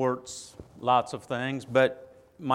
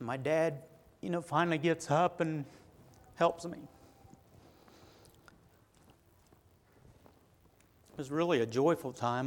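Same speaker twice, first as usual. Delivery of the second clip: soft, tearful, choked-up crying, voice breaking; 3 semitones higher, 5 dB quieter than usual. Recalling learning to walk again at eight years old, crying. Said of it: "I don't know why I'm crying".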